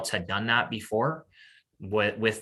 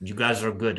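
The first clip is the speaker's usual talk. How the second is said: put-on Norwegian accent. Retelling what an opposing curler said after a game: imitating Thomas Ulsrud's accent. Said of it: "with his accent".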